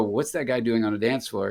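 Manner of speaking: ordinary talk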